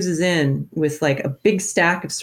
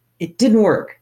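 mad, angry yelling; 4 semitones higher, 3 dB louder than usual. Retelling an angry phone call from a New York toy executive, retelling an angry yell. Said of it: "yelling at me, like".

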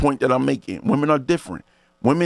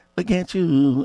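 put-on woman's voice, higher pitch; 4 semitones higher than usual. Retelling what she would say about going out: imitating her voice. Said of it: "That's my voice".

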